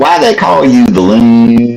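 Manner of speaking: fake Southern accent, loon stretched out. Recalling what he said when he called in on a show, fake Southern accent. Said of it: "I had my fake Southern accent".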